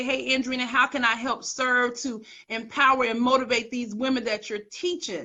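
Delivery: ordinary talk, nothing marked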